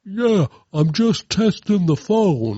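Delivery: put-on high boy's voice faking a grown man. Mocking a voice that sounds fake, doing a boy faking an older man's voice. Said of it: "a twelve year old boy pretending to be an older man by being like".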